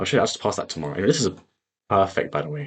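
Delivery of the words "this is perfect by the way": voice breaks up high mid-phrase. Speaker comments on a trade while marking a chart, voice crack. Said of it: "Oh, voice crack".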